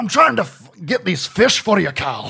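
very high, loud, heavy Scottish brogue. Imitating a game character who catches fish: Scuba Stev's Scottish brogue. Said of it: "He has the biggest Scottish accent".

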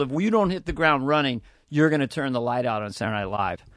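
normal talking voice

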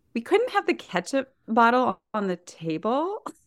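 fighting back a laugh. Sharing a childhood memory, speak while holding back laughter. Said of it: "I'm trying to say this without laughing".

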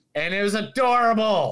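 plain

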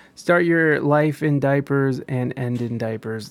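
ordinary delivery

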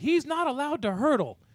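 put-on coach voice, high-pitched screaming. Retelling how a coach on the sideline yelled about the rule: imitating a coach screaming. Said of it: "starts screaming".

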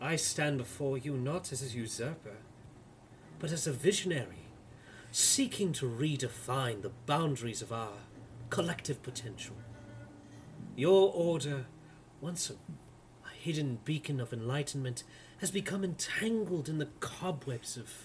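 soft velvety, silky whisper. Game master voicing a lord addressing Major Armstrong, in a velvet whisper. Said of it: "[name], as you see this not tall, not short, perfectly average build, height, yet seemingly charismatic lord of a man, he approaches you as he begins pacing around the room. ... His voice, a velvet whisper, continues to coat the very room".

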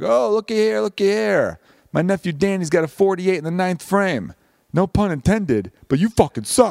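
put-on high Chicago Italian accent. Retelling a friend's joke at the bowling alley: Chicago Italian accent. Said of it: "Danny's got that classic Chicago Italian accent".

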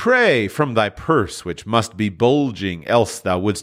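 ordinary delivery

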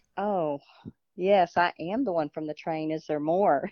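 normal talking voice

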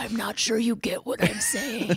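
very slow, drawn-out whisper. Imitating the other speaker standing behind a listener: imitating a whisper. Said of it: "You're just whispering".

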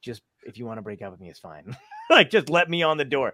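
put-on whisper. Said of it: "I imagine him whispering to her".

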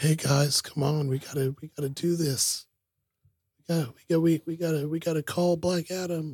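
high, hushed, half-whispered stage whisper. Retelling a kid's speech in a movie: imitating a kid half-whispering. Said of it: "whispering it".

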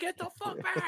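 mock, very high, screamed shout. Retelling yelling at a defender who kept pushing forward: imitating screaming at a player. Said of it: "I'm screaming at him".

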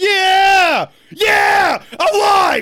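very slow, stretched-out, drawn-out shouted yeah. Reacting excitedly to the welcome at the start of the show: yelling. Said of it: "I feel like yelling!".

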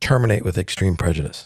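ordinary talk, nothing marked

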